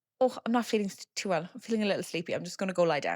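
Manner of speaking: put-on casual, cool-sounding tone. Retelling how an aunt excused herself from the campfire: imitating someone playing it cool. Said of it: "she plays that very cool".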